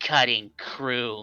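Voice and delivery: soft mutter under the breath. A game master voices a character reacting as a player takes damage, muttered under his breath. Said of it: "like under his breath just goes".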